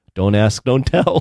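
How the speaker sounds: quiet aside under the breath. Retelling a scene with Robin Williams and Hank Azaria: Hank Azaria muttering under breath. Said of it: "under his breath goes".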